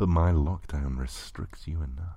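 ordinary delivery

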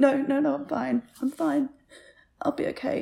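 choking back tears, slow and slightly high. Saying goodbye to someone getting ready for class, tearing up. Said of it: "I can't believe I'm tearing up in front of you".

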